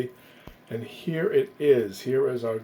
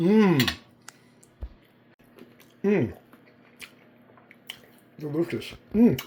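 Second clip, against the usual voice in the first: slow, muffled talk through a full mouth, savouring mms; 4 semitones higher than usual. Tasting the finished dish on camera, talking with mouth full. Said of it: "I'm talking with my mouth full".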